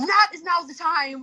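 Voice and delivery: very high, sharp, hard snapping retort. Speaker reenacts snapping at someone who came up to them, retelling snapping at someone. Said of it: "snap on them like really hard".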